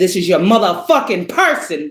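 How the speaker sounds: angry, heated voice. Speaker talking about the twin flame dynamic, angry. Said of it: "I'm angry".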